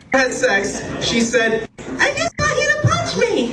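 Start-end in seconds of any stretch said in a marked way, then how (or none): 1.7-3.5 put-on girlish voice, pitched very high. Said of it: "High voice".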